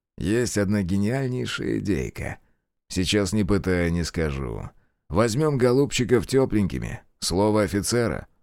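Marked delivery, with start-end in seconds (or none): none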